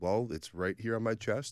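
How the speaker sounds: ordinary talk, nothing marked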